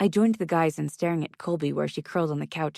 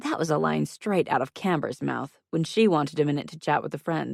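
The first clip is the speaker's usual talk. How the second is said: usual speaking voice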